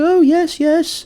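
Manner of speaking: very high, chirpy, cheery housewife voice. Imitating a grandma who acts like Aunt Bee: cheery fifties housewife voice. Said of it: "typical, like, fifties, like, cheery housewife".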